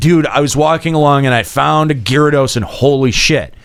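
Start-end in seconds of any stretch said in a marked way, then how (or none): none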